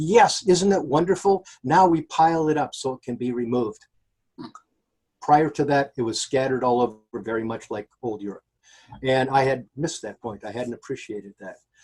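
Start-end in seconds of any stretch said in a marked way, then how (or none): 0.0-3.8 mock boasting, proud and pleased. Retelling the interpreter's answer about the garbage piles: imitating someone speaking proudly. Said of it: "he said very proudly".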